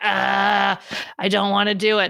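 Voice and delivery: rough, slow, creaky cranky-cat voice. A host voices their cat Emma, in a cranky cat voice. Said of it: "my cat's voice".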